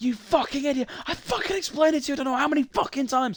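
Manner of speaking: acted-out fast, high screaming rant, rattled off. Retelling how he screamed at a guy for thirty minutes: retelling own screaming rant. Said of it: "screaming at this guy".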